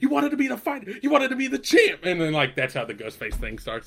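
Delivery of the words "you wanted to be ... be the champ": mock very high, loud yelling rant. Retelling a scene where a fighter is yelled at: imitating someone yelling. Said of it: "yelling. He's like".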